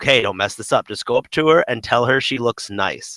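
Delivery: normal talking voice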